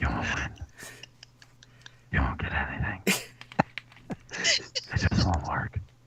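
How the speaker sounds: creepy whisper, low and soft.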